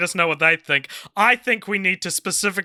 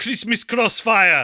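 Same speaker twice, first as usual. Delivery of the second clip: words given a put-on German accent; 3 semitones higher than usual. Naming a film title after being asked to: german accent. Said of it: "say it in a German accent".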